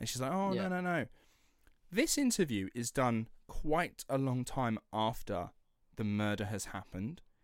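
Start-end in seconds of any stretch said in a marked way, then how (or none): 0.3-1.1 mock really upset, distressed, high-pitched.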